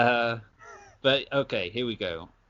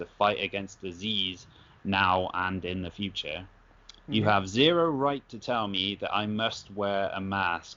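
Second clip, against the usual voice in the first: ordinary talk, nothing marked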